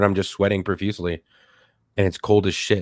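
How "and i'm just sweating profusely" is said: ordinary talk, nothing marked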